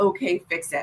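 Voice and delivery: normal talking voice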